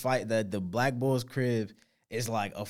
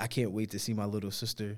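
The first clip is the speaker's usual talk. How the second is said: put-on muttering, quieter; 4 dB quieter than usual. Speaker imitates a guy who would randomly talk about his little sister, muttering. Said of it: "he randomly would just be like muttering".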